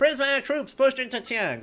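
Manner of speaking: put-on old-timey newsreel announcer. Reading news of troops and conflict: old-timey newspaper announcer voice. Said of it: "old-timey newspaper announcer voice".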